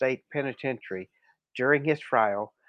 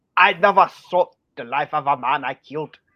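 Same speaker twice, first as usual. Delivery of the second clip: put-on, loud Scottish accent; 9 dB louder than usual. Speaker tries out a character's line, sounding Scottish. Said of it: "sound Scottish".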